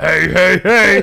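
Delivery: loud, rough cartoon voice. Asked to do the Fat Albert voice for friends: Fat Albert voice. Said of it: "do the Fat Albert voice".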